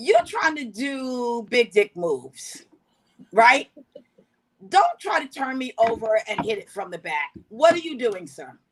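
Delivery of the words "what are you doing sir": acted-out, overly polite, as courteous as can be. Retelling their reaction to a partner's move, as a mock-polite question. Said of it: "with all the politeness I have".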